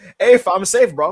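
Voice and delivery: put-on high, loud, slow accent sounding British and Chinese. Retelling a wrestling promo as Leon: Leon voice sounding British and Chinese. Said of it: "that's how he sounds".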